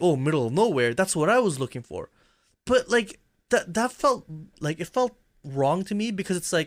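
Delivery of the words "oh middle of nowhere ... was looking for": normal talking voice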